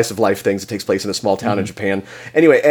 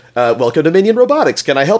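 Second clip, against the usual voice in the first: friendly, higher-pitched robot voice; 5 semitones higher than usual. Describing a character named Isaac and demonstrating him: Isaac's friendly pre-programmed voice. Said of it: "pre-programmed, very consumer-facing voice".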